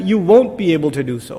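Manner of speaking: ordinary talk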